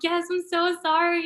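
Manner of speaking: sobbing, tearful, very slow, high and drawn out. Retelling answering a mother's question, imitating own past crying. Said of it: "crying my eyes out".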